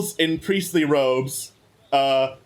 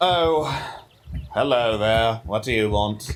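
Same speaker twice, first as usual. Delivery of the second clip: put-on very low, deep, scornful, sneering old elf voice; 7 semitones lower than usual. Voicing a stall keeper turning to greet the player's character, sneering elf voice. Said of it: "kind of sneering elf".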